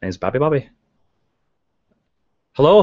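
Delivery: stage-Irish leprechaun brogue. Trying out an Irish accent learned years ago: Lucky Charms Irish accent. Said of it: "but I had to learn this accent".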